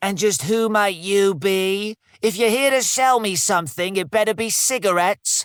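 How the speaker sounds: rasping, high barking voice. Narrator voicing the farm lady as she barks at you in a raspy voice. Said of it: "She barks at you in her raspy voice".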